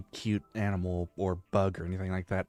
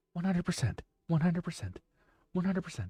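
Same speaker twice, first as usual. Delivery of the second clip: put-on robotic voice, higher and quieter; 10 semitones higher, 4 dB quieter than usual. Repeating stock phrases as a joke: mock NPC streamer voice. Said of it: "maybe I should do an N P C stream".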